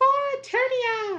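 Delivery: very high-pitched, shrill, loud rallying yell. Imitating a line from a scene that is voiced too high: imitating a very high-pitched voice. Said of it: "intentionally sounding very, very high".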